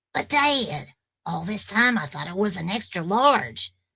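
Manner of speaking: put-on cartoon boy voice with swooping, bouncy pitch. Speaker shows off the cartoon voices they can do, as Bobby Hill voice. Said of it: "I can do Bobby Hill from King of the Hill".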